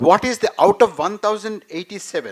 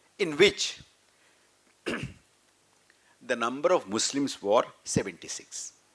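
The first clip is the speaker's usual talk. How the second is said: slow, hushed, deliberate, near-whispered pace; 6 semitones lower, 9 dB quieter than usual. Reading out figures so a listener can take down the numbers, speaking slowly. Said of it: "I'll say slowly".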